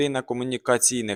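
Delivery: ordinary delivery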